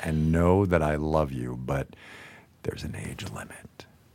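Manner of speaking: as gentle as possible, soft and low. Telling someone who is not ready to give up, the speaker says this as gently as possible. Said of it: "I am saying this as gently as I possibly can".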